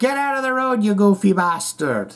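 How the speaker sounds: attempted Irish accent. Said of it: "try your best Irish accent".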